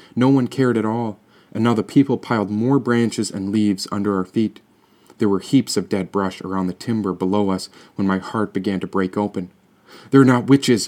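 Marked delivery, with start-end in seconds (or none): 10.1-10.9 loud, raised yelled outburst. The narrator yells to the people piling branches under their feet: yelling. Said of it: "I yelled".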